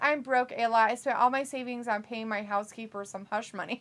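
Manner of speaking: plain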